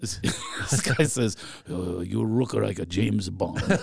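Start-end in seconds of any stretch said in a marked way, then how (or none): 1.7-3.6 put-on male Japanese accent, much lower. A speaker retells what a man in Japan told him, imitating a man's Japanese accent. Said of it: "It's actually what he sounded like".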